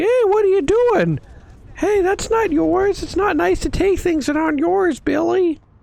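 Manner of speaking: very high, squeaky puppet voice, deliberately clumsy. Imagining Elmo rounding the corner and scolding Billy, in a terrible Elmo voice. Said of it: "My terrible Elmo voice".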